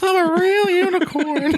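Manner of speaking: very high, slow, drawn-out marionette voice. Asked by the other speaker to do it, talking in Pinocchio voice. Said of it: "You do your Pinocchio voice".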